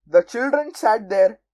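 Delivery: ordinary delivery, nothing marked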